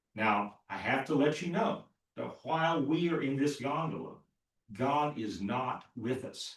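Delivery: play-acted grave, very serious preacher tone. Retelling what a pastor told his congregation as the gondola started: retelling a very serious tone. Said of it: "in a very serious tone".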